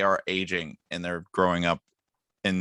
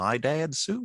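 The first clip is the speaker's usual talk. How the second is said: silly, high, pitched-up cartoon dog character voice; 9 semitones higher than usual. Suggesting a clip to post, the speaker quotes the line in a Goofy impression. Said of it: "doing a Goofy impression".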